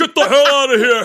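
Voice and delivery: shrill, very loud, high-pitched shout. Retelling waking up to someone opening the door: imitating own deepened dad voice. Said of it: "deepened my voice".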